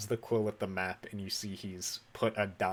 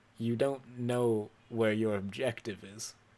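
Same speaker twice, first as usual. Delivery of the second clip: mocking, with a sneer in every word. Game master voicing a character who walks up to the player, sneering. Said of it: "he sort of sneers at you. He goes".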